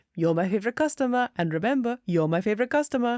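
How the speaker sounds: put-on Austrian-accented action-hero voice. Recapping a movie scene, quoting the lead's repeated phone sign-off: Arnold Schwarzenegger impression. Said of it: "[name] was Arnold Schwarzenegger for every single impression".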